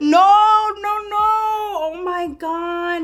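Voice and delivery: high, loud, gasping, shocked cry.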